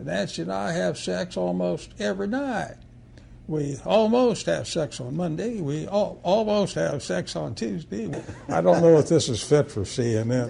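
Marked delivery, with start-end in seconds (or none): 0.0-8.1 put-on heavy South Carolina accent, pitched up. Retelling a joke as Strom Thurmond, deep South Carolinian accent. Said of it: "in his deep South Carolinian accent".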